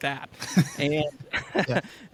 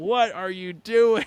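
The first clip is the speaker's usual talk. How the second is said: play-acted, upset, exasperated instructor's yell; 4 semitones higher than usual. Retelling a flight instructor screaming from the back seat: imitating someone screaming. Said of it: "He was screaming at me in the back".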